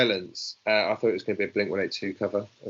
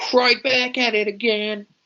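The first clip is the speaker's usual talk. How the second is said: Floridian accent, pitched very high; 14 semitones higher, 4 dB louder than usual. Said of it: "Very nice Floridian accent".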